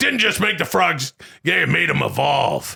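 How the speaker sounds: mock ranting commentator voice. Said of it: "I gotta do that every time I say".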